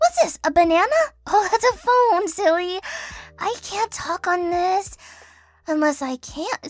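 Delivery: clueless, stupid, all-over-the-place scatterbrained character voice. Showing an example of playing a stupid character: stupid character voice.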